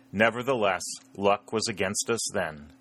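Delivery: ordinary delivery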